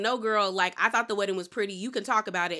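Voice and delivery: ordinary talk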